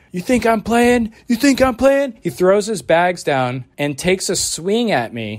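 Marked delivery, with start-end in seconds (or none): 0.2-2.2 shrill, threatening acted scream. Retelling how a man ran back over and threatened: imitating a man screaming.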